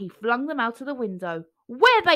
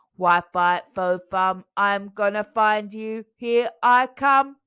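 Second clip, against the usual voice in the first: booming mechanical robot voice, loud and slow; 4 dB louder than usual. Reading a story aloud, the narrator voices the giant melon bot: loud robotic voice. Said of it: "a loud, robotic voice".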